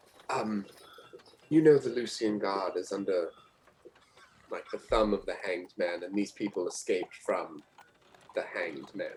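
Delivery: hushed, secretive, very quiet half-whisper. Leaning in to half-whisper a warning into an NPC's ear: half-whispering very quietly. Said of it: "whisper very quietly".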